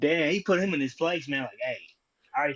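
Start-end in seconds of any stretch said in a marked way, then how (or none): 1.6-2.5 play-acted fed-up, irritated, annoyed tone. Recapping an argument between two people: retelling an irritated reply. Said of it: "Coleman got real irritated".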